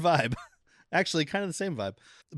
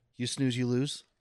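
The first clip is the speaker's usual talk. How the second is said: put-on calm voice; 4 dB quieter than usual. Retelling a movie scene, quoting Woody's line: imitating Woody, real calm. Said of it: "Just real calm".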